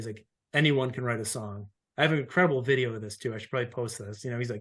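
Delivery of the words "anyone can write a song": composed, calm, professional classroom teacher voice. Retelling how Gene spoke to a wide range of people, imitating Gene's calm teacher voice. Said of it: "in the most calm teaching professional voice".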